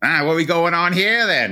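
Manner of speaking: odd put-on Australian accent, pitched high and weird. Show how Chris Hemsworth talks in his role, in a weird Aussie accent as Dementus. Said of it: "he's talking in that like weird like Aussie accent".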